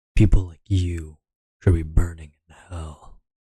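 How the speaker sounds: put-on deep, sultry, sexy male voice. Voicing a line after correcting its wording, in a deep sexy man voice. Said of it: "I'm trying to go with a deep voice".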